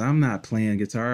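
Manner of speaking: usual speaking voice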